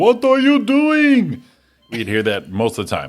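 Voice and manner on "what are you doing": put-on foreign-accented, very high, loud, slow, drawn-out yell. Retelling how a foreign salesman neighbor sounded: imitating a foreign neighbor's voice. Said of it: "he had the, the voice like".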